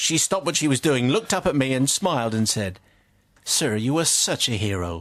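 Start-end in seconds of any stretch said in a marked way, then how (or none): 3.4-5.0 put-on strong, broad American accent, low and slow. Retelling what the lady said to him next, broad American accent. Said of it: "the accent or".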